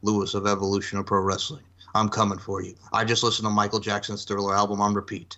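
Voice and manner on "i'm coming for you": put-on dark, menacing voice. Picking a tournament winner, imitating Lewis's dark menacing voice. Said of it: "with his dark voice that's very menacing".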